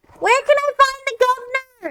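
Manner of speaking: very high-pitched, loud yelling. Playing a character asking a passerby for the governor: yelling. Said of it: "Why are you yelling?".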